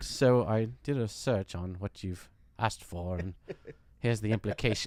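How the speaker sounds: sinister, menacing, very low voice. Imitating the AI Claude answering a request: imitating Claude as sinister. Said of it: "just sinister".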